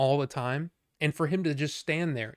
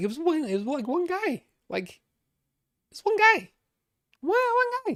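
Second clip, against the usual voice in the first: very high-pitched, animated, swooping, rising chatter; 13 semitones higher than usual. Complaining about customers, the speaker notices his own voice: talking in a high voice. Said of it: "I don't know why I'm talking so high".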